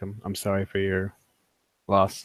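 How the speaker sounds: soft, halting and stumbling half-whisper. Offering condolences in character over a fallen companion: half-whispering.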